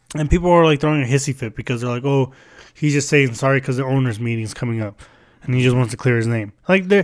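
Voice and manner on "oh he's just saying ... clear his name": plain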